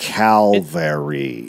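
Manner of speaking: "cavalry" drawn out, said really slowly. Retelling a story, the speaker says "cavalry" really slowly. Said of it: "going to say that really slowly".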